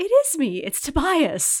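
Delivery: high, swooping, drawn-out, slow, sing-song character voice. Showing the tone of voice David Cross uses in Arrested Development, Mrs. Featherbottom voice. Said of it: "He goes".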